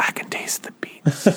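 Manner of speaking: whispered slowly and softly.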